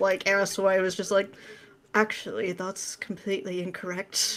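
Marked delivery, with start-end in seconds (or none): 1.9-4.4 soft, droning British monotone without lilt. Retelling an argument, the speaker quotes his bestie in his British monotone. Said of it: "in his British monotone".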